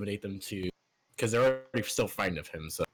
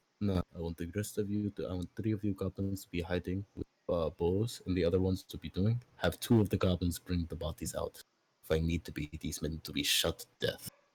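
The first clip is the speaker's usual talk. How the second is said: hushed, whispering voice; 3 semitones lower than usual. Giving secret orders to a goblin in character: whispering. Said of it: "he kinda whispers to it".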